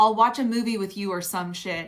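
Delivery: ordinary talk, nothing marked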